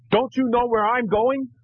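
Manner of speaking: shrill, high-pitched shout. Retelling how another driver lowered his window and called out: imitating a driver shouting. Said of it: "he shouts".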